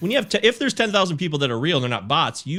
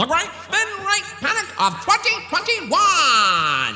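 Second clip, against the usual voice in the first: put-on old-fashioned voice, pitched very high. Announcing what they're going to talk about, in an old-timey voice. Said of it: "do it in an old-timey voice".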